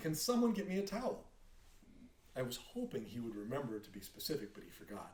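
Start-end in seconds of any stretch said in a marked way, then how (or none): 0.0-1.2 put-on loud, high calling-out yell in a child's voice. Retelling a family member calling from the bathroom: imitating a child yelling. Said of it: "he was just yelling".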